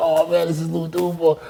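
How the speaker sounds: starstruck, wild, excited over-the-moon gushing. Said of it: "I was all going crazy".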